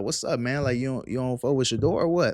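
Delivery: ordinary talk, nothing marked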